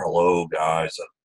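dull unenthusiastic put-on voice. Showing umpires how not to sound at the plate meeting: Eeyore voice. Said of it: "You don't wanna be like Eeyore".

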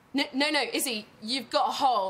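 ordinary talk

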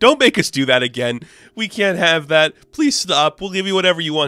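mock freaked-out, frantic, panicked pleading. Retelling characters begging Moon Knight: imitating panicked pleading. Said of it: "And they're freaking out".

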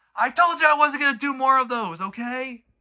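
loud, very high, angry shouting yell. A video maker telling someone he won't make more of those, getting angry. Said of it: "I'm sorry for getting angry".

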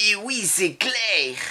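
mock, emphatic, high, slow, exaggerated yes.

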